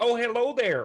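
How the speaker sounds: put-on, very innocent, guileless Minnesota accent. Describing a halfling family, retelling how they greet people: mock-innocent Minnesotan accent. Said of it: "like a Minnesotan like accent, like very innocent".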